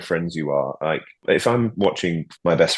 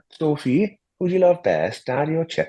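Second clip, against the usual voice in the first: high-pitched mock Welsh accent; 10 semitones higher than usual. Showing off accents in conversation, quoting a line; welsh accent. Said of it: "That's a good Welsh accent".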